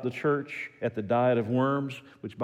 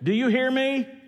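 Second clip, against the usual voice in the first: mock loud raised voice at very high pitch; 13 semitones higher, 5 dB louder than usual. Retelling a daughter on the phone to her father; retelling a raised voice. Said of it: "she raised her voice".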